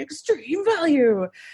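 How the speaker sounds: cheesy, very high-pitched monster-truck announcer hype. Imitating a friend joking about business, in a cheesy monster truck voice. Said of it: "used like the really cheesy like monster truck voice".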